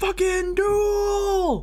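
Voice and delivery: put-on very high shout with "duel" drawn out. Retelling what somebody in the background of the video shouted: imitating someone shouting. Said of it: "somebody in the background who just shouts".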